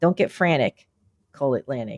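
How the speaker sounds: low, native Philadelphia accent, ad-slogan delivery. Speaker quotes the Atlantic Transmissions commercial in a Philly accent. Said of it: "the only time I can bring back my real Philly accent".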